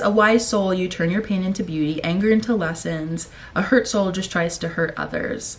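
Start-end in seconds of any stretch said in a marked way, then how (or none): none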